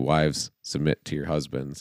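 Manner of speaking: normal talking voice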